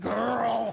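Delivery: raspy, hoarse, drawn-out drawl.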